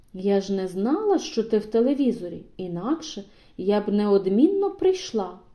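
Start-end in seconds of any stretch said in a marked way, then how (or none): none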